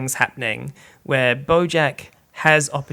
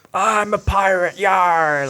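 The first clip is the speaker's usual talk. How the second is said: put-on very slow, high, drawn-out drunken pirate yelling; 6 semitones higher, 4 dB louder than usual. Retelling getting very drunk at a birthday party: retelling a drunken pirate yell. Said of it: "Like yelling at everybody".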